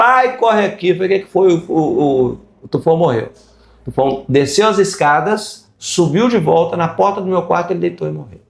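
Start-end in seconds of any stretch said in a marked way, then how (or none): 0.0-0.9 high, urgent, tearful sobbing cry. Recounting a son running up to the speaker, imitating a crying shout. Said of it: "chorando, gritando".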